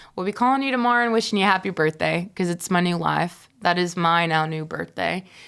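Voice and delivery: normal talking voice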